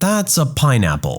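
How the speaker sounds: mock-disappointed tone. Retelling what she said when shown the spiky plant: mock-disappointed. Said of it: "said in a disappointed voice".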